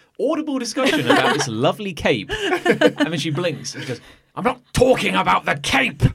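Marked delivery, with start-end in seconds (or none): 4.4-6.0 furious, rough, really angry hard tone. Game master voicing a woman who cuts off talk about a cape: really angry voice. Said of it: "her voice is like really angry".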